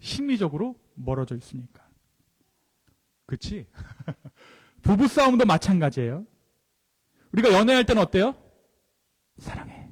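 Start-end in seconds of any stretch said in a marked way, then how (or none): 9.4-9.9 soft, very quiet, barely voiced whisper. Illustrating how couples speak to each other while dating, soft whisper. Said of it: "속삭입니다".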